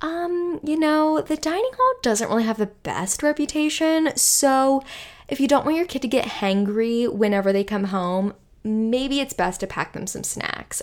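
put-on gentle, kindly tone. Quoting church camp counselors warning parents to pack food: imitating a gentle, nice tone. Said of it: "say it in like a gentle, nice way".

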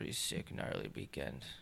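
soft, unvoiced whisper under the breath.

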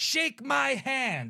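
very high, loud hollering yell. Describing a clip, speaker acts out a man screaming at Sky: retelling a man's yell. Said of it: "And he yells it".

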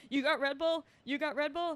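very loud, high, demanding shout, repeated. Retelling a guy at a bodega asking over and over: imitating someone screaming. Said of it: "started screaming".

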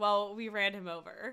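usual speaking voice

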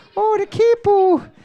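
very high, loud put-on Irish accent. A player explains a spelling rule by saying a word in an irish accent. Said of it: "That's a great accent".

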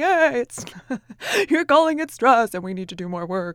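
deliberately annoying, weird, obnoxious voice. Speaker gives listeners a mental alarm bell, in a weird obnoxious voice. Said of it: "you'll hear my weird voice doing this".

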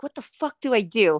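normal talking voice

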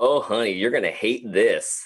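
put-on sassy nurse voice. Retelling what a nurse said to a patient behind the curtain, imitating a sassy nurse. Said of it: "this one sassy nurse".

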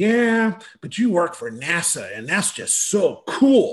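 put-on slow, emphatic, dead-serious, intense child voice. Retelling what a kid with a notebook said: imitating a kid speaking intensely. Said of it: "he said that with this intensity".

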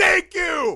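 joyful, ecstatic shriek, very high and very loud. Retelling a reaction to a scene in the movie: retelling own scream. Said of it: "actually screamed at my T V".

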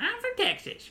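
very high-pitched cartoon character voice. Joking during a movie recap with an impression of Sandy. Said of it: "it was an impression of Sandy".

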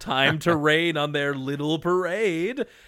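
cackling cartoon villain voice with cackle. Retelling a villain calling down from her blimp: cackling villain voice. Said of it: "she's like cackling from her blimp".

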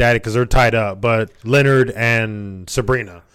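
normal talking voice

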